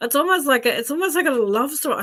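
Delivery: talking through laughter. Describing a vision to the listener, laughing while talking. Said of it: "Sorry, I'm laughing".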